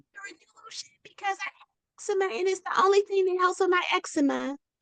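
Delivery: put-on very high, tiny, childlike baby voice. Speaker retelling what a little girl told her on a call, little girl baby voice. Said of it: "didn't hear the baby voice?".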